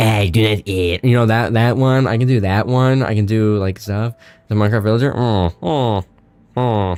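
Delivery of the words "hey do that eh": strange distorted put-on voice. Showing a weird distorted voice used in an earlier video. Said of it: "like the voice I did for the Gooning video".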